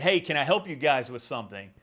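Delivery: loud, challenging calling out. Retelling confronting two approaching strangers: retelling own raised voice. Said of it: "I kind of raised my voice and I said".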